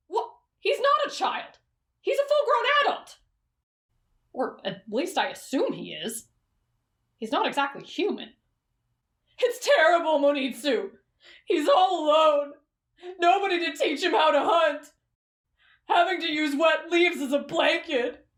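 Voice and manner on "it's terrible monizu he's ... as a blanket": sad, sorrowful, sniffling, tearful voice. Arguing with Monizu about a sad story read to a young girl; sad, sniffling.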